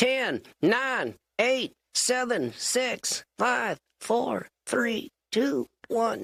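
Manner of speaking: very slow puppet voice, fading and receding away. Ventriloquist showing a puppet routine, puppet voice going downstairs. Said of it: "count down my puppet like he was he was going downstairs".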